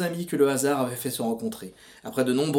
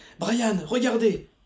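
high, strangled, throttled, choked cry; 8 semitones higher than usual. A character urges a companion to look; choked exclamation. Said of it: "s'exclama Laurel, la voix étranglée".

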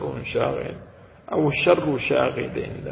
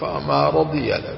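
normal talking voice

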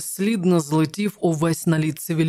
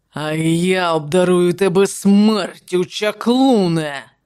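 loud, slow, hoarse, rasping voice; 5 dB louder than usual. A king answers the sorcerer as he swings his sword, rasped. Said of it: "прохрипів король".

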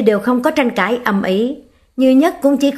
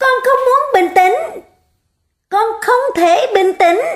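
frantic, shrill, very high screaming; 11 semitones higher than usual. Reading a story, a child shouts back at a parent, screaming loudly. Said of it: "lớn tiếng mà thét gào".

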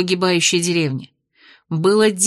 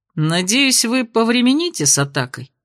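sly, jeering, mocking, taunting tone; 3 semitones higher than usual. An unseen speaker addresses the prince, mocking. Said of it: "насмешливо произнес все тот же голос".

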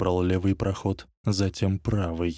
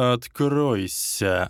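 sibilant, snake-like hiss on single word; 4 semitones higher than usual. The Dark Lord orders a wall to open, hissed. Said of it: "Тёмный Лорд прошипел стене".

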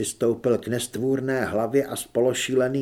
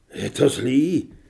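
aghast, horrified, fearful tone; 4 dB louder than usual. The narrator asks the hurt woman beside him, asking in horror. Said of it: "Zeptal jsem se zděšeně".

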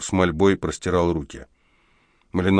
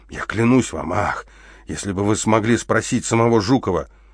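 ordinary delivery

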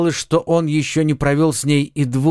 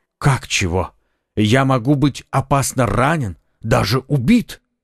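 ordinary delivery, nothing marked

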